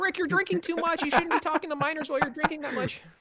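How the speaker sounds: very high crappy squeaky voice, rattled off fast and badly. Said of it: "their crappy impression of Rick and Morty".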